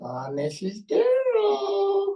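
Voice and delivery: very high, drawn-out ventriloquist thrown voice. Retelling calling the teacher during class: imitating throwing his voice. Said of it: "How could I throw my voice?".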